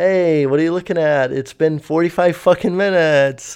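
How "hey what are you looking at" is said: mock awkward laughter, faster. Retelling a girl on a plane staring at him: retelling awkward laughing. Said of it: "I'm kind of like awkwardly laughing".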